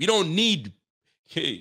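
Nigerian-sounding delivery. Talking about what the team needs, briefly sounding nigerian. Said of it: "I sounded Nigerian there".

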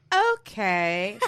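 put-on cheerful, bright, chirpy okay masking dislike. Imitating own reply to a snippy customer: imitating own fake-chirpy voice. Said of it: "the more chirpy my voice is".

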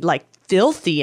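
normal talking voice

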